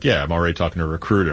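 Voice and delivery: mock deadpan delivery. Retelling what someone named Razor said to the speaker, retelling a deadpan reply. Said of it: "classic deadpan fashion".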